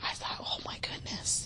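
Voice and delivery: soft, breathy, shocked inner whisper.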